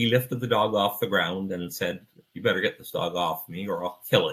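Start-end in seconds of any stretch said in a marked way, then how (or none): 2.3-4.3 very calm, even delivery. Retelling a threat a man made while holding a dog: imitating a very calm tone. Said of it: "he just said it in a very calm tone".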